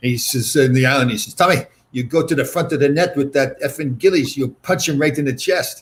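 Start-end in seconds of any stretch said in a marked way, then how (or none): 1.3-5.8 put-on speaking in French accent. Retelling what a coach told him: imitating Vad's French accent. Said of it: "Vad with his French accent".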